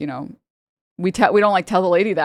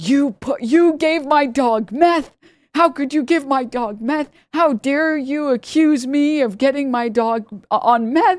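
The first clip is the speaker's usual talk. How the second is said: high, drawn-out, outraged screaming; 9 semitones higher than usual. Retelling how a woman at the clinic screamed at the staff: imitating a woman screaming. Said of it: "this lady starts, like, screaming".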